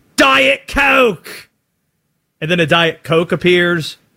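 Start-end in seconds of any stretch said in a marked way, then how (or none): 0.2-1.5 high, loud, barking shout. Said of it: "he just barks out commands".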